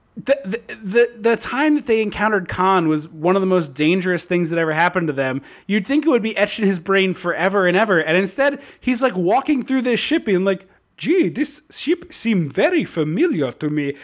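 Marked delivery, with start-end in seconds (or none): 11.0-14.0 put-on slow, drawn-out, botched, unplaceable accent. Imitating a character walking through a ship: imitating a bad accent. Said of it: "I don't know what that dialect was".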